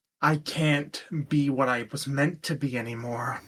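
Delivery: soft, low-key, grumbling mutter. A player voices his character after a failed attempt to make him let go, grumbling quietly. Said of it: "he just grumbles quietly".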